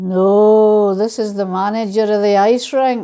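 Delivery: big, grand voice with the word "no" drawn out. Retelling the ice rink manager's answer in a joke, big booming voice. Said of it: "the big booming voice said".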